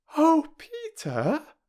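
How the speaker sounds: very high-pitched, overwhelmed, overcome cry. Peter gives Bobby his steam engine full of sweets, and she cries out, overcome. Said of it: "cried Bobby, quite overcome by this munificence".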